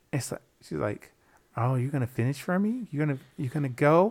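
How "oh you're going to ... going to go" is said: mock-seductive put-on voice, much quieter. Retelling a phone call with a woman, imitating her sexy voice. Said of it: "trying to use her sexy voice".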